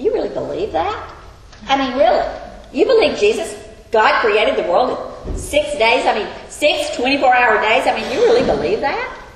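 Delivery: mocking, sarcastic, incredulous, disbelieving taunt. Speaker acts out a mocker challenging a believer: mock-sarcastic disbelief. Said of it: "Sarcastically saying that".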